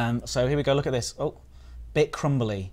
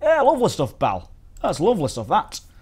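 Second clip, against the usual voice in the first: put-on loud, sing-song Yorkshire accent; 7 semitones higher, 5 dB louder than usual. Tasting something sandy and rating it, the speaker slips into a yorkshire accent. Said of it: "That's me Yorkshire accent there".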